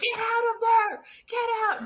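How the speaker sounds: acted, very high, anxious, drawn-out yell. Retelling reacting to a tense book scene: imitating shouting at a book. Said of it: "I'm shouting at the book".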